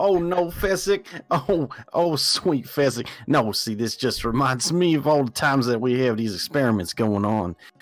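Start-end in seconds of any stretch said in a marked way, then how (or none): 0.0-3.1 high, loud laughter through the words. In a role-play scene, answering a whispered question, laughing loudly while talking. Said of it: "And I laugh even louder".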